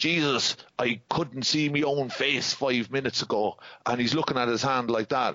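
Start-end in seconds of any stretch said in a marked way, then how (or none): 0.0-3.6 put-on Irish accent, slower. Retelling what a man in an irish bar said to the speaker, irish accent. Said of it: "in this accent".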